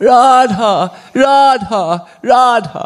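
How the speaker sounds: desperate calling out, high-pitched and loud.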